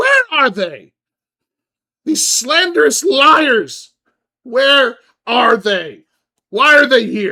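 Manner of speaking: shrill, very loud, very high furious yell. Voicing a woman bursting into the room looking for them: furious yelling woman. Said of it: "she is yelling".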